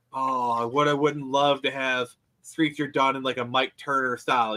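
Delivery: normal talking voice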